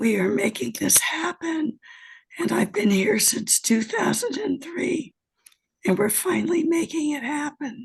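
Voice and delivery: husky, hoarse-throated speaking voice. Speaking at a meeting after returning from a flight, hoarse voice. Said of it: "I have airplane voice".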